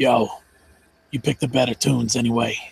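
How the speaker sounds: loud stage whisper that carries everywhere. Voicing a character leaning over to speak: loud attempted whisper. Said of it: "in what he thinks is quiet, but it's not quiet at all".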